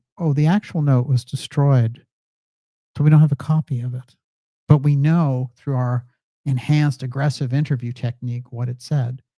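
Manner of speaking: normal talking voice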